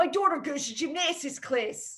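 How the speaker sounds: put-on, showy Philadelphia accent. Saying a favorite Philly accent sentence of the week, in a Philly accent. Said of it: "my favorite Philly accent sentence".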